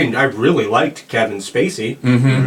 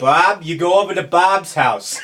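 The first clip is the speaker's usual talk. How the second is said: put-on Boston accent, pitched up; 6 semitones higher than usual. Showing how to say Bob in a Boston accent. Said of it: "fun to say in a Boston accent".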